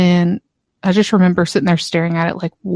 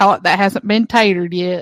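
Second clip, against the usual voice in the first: put-on straight-faced, earnest Southern country accent. Quoting a friend's line in a country accent, imitating a country accent. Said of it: "he said it in a country accent".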